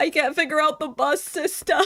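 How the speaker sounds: acted-out high, teary, blubbering sobbing voice. Retelling a video where she cried over the bus system: imitating someone crying. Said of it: "when she was crying".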